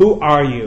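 drowsy, lazy, languid sleepy voice, projected. The caterpillar takes the hookah from his mouth and addresses Alice: languid, sleepy voice. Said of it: "addressed her in a languid and sleepy voice".

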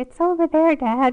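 put-on very loud, high, little kid voice. Retelling telling a furious father where the grave is: little kid voice. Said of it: "in my little kid voice".

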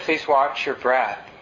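gentle, easygoing, undemanding tone. Meditation practice example of an instruction, said in a gentle way. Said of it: "even if I said it in a gentle way like that".

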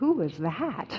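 mock quavering, trembling voice of a three-year-old. Retelling a three-year-old just put back to bed: imitating a child's trembling voice. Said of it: "say with a trembling voice".

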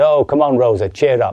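loud, cheery, jolly, slightly high coaxing. Retelling a car ride, imitating the father being jolly. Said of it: "he was a bit high and being jolly".

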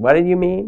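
very high, confrontational, defensive delivery. Showing one tone for the same question in a conflict: defensive tone. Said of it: "in different tones of voice".

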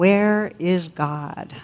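put-on severe, grave, stern delivery. Telling a story, voicing a clergyman questioning an 8-year-old boy, retelling a stern question. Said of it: "says sternly".

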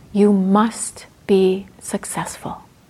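mock very stern, slow, deliberate pronouncement. Retelling advice given after reporting a tight practice: imitating Sayadaw U Janaka sternly. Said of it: "said very sternly".

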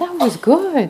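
surprised tone. Imitating a participant's surprised reaction to the exercise: imitating a surprised tone. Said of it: "I like the look of surprise".

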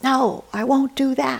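put-on girl shout, high, drawn out, very loud. Retelling a teenage daughter shouting at her father: imitating a girl shouting. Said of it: "shouting at her father at the top of her lungs".

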